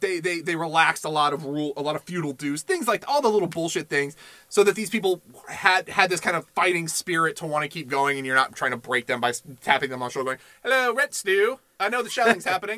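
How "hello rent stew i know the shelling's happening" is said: sudden put-on British accent, spoken politely. Acting out someone tapping people on the shoulder during shelling, British accent. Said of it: "I don't know why I'm British in this".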